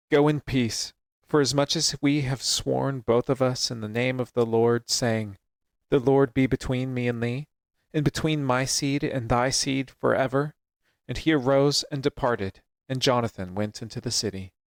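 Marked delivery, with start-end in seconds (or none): none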